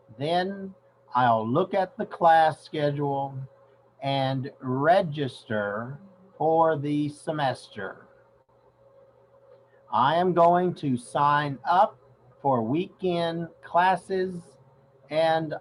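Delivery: slow, clearly enunciated speech. Rereading a text aloud so listeners hear the words: slow and clear. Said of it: "I'll speak slowly and clearly".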